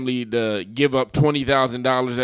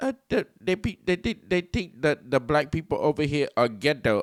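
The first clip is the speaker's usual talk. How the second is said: soft put-on Filipino accent, halting repeated words; 3 semitones higher, 5 dB quieter than usual. Retelling what a woman told him when he asked her, imitating a Filipino accent. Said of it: "the Filipino accent is very hard for me to replicate".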